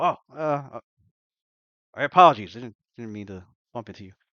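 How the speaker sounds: loud, gruff, hurried dwarf voice. Narrating someone bumping the listener's chair and apologizing, in a gruff voice. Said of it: "you hear like a gruff voice go".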